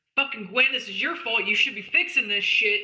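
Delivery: angry, blaming yell. In character in the water, blaming gwen for the hole: yelling at gwen. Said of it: "I am gonna yell".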